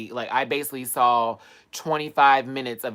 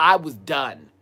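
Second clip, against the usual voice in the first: plain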